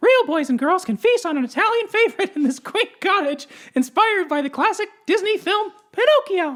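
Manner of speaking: very high, loud, cartoony voice. Reading a Disney restaurant's description aloud: Mickey Mouse voice. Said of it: "It sounded more like Mickey Mouse".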